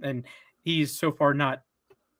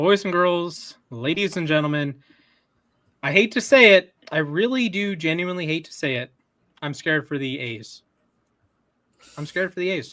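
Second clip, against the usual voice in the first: usual speaking voice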